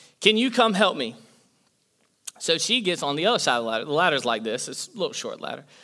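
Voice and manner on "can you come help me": yell, higher. Up a ladder, the speaker retells calling his wife for help: retelling a yell. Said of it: "So then I just yelled".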